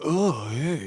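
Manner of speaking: like a surfer dude. Imitating how an actor talked to kids: Bill and Ted surfer voice. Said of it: "this Bill and Ted, like".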